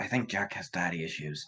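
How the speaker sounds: hushed, quiet whispered aside. Voicing a character whispering an aside to another character: whispering. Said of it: "Fia kind of whispers to Garros".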